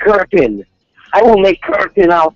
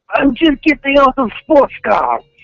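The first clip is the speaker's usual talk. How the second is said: fake, strong, pronounced Russian accent, pitched up; 6 semitones higher than usual. Greeting the other speaker on joining the morning chat: put-on pronounced Russian accent. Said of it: "your pronounced Russian accent today".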